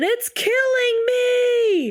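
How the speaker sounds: mock, very high cry of pain, "me" drawn out. Recapping a scene where Lisa, in the ER, cries to Herbert about her leg, imitating a scream. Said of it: "she's screaming".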